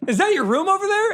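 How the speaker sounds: put-on pitched-way-up weird New York accent. Retelling how Terry changes the subject: weird New York accent as Terry. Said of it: "her weird New York accent".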